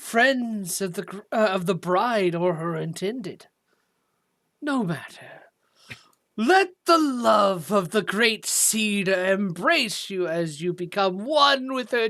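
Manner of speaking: sputtering, gurgling, spitting monster voice. A creature addresses the wedding guests, in a gurgling, spitting voice. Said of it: "voice gurgles and spits as it speaks".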